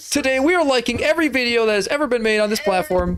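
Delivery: very high, amped-up video host voice. A co-host asks for the YouTuber voice, and the speaker delivers: amped YouTuber voice. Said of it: "amp that YouTuber voice now".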